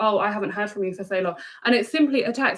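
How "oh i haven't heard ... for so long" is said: usual speaking voice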